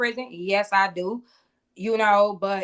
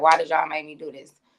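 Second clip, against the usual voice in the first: put-on crying voice, lower pitch; 5 semitones lower than usual. Retelling a drunk woman at the open freezer, imitating someone crying. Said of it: "be crying and be asking".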